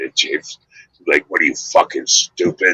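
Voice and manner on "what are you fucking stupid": put-on pissed-off, annoyed tone. Retelling how James Caan answers reporters' questions: imitating James Caan pissed off. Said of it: "And he gets pissed off".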